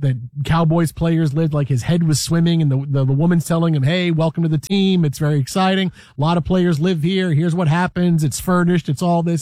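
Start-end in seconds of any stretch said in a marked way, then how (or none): none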